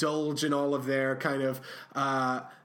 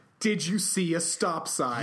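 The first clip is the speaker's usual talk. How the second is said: ordinary delivery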